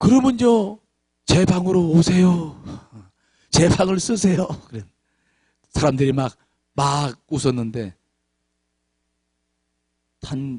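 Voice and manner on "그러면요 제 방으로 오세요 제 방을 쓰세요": mock choked-up, tearful sobbing voice. Retelling the unexpected words from Ralph's mouth, acted out choked up and tearful. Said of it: "입이 막 울먹이면서".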